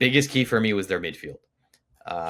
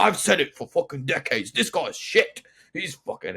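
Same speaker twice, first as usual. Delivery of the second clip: put-on posh London accent, higher; 7 semitones higher than usual. Imitating angry Arsenal fans from online reels: attempted posh London accent. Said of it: "I can't do the posh London accent".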